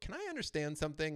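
sarcastic, needling tone. Recounting a phone call to the front desk, the speaker quotes their own words, retelling a sarcastic remark. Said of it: "a little bit sarcastic".

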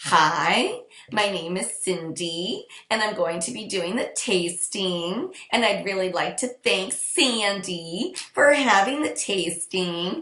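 uptalk, high rising pitch on phrase ends and tasting. Demonstrating how women sound when making a first impression, high rising phrase endings. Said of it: "women add this high pitch at the end of all their phrases".

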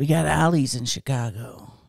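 deep, cool guy voice. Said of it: "This is your cool guy voice".

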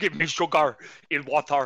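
slow, loud, drawn-out alien voice. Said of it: "the alien puts the guy's skin on and he's like".

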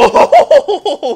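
high, loud burst of laughter in the voice.

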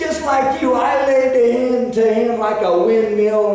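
put-on high, slow, loud, proud child voice.

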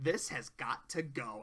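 put-on soft, slight hint of Valley Girl accent. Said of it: "there's a hint of it in there".

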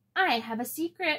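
proud, bragging, high. A girl goes to her brother while he draws a calendar; proud. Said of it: "Riceys Regenie told him proudly".

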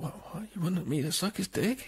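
high, bewildered, confused double-take tone. Retelling a film scene, quoting a character: imitating a quietened voice. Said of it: "he quietens the voice down a bit".

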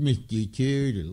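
mopey cartoon hound voice. Speaker showing how he always says his lawyer's name: Droopy Dog voice. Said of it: "I always say Mr. Turtle in a droopy dog voice".

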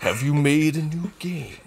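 slow, deliberate, menacing, slightly high voice. Joining the joke about the actor as the boss: menacing Hugo Weaving voice. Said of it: "everything he says sounds so menacing".

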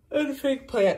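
high-pitched words spoken through a yawn. Filming a tour of the home, the speaker talks while yawning. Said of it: "sorry, I yawned".

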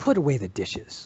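scornful, hostile tone full of contempt. Showing how a simple request sounds with contempt: hostile contemptuous tone. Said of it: "and in that tone".

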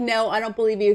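plain

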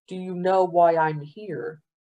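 ordinary talk

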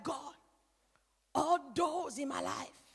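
slow, drawn-out, prayer-like tone. Describing how people pray during trials, imitating a prayer voice. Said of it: "this voice is like prayer voice".

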